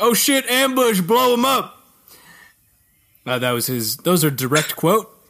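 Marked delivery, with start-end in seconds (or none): 0.0-1.8 play-acted shrill, high-pitched, sudden shout. Retelling a game character's line during an ambush: imitating Peppy's shout. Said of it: "and the Peppy's like".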